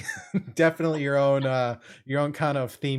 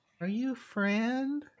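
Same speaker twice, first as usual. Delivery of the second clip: put-on very high, soft, small, echoey child voice; 10 semitones higher, 5 dB quieter than usual. Game master voicing an unseen presence speaking to the players, little childlike echoey voice. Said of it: "Little childlike voice, kind of echoey".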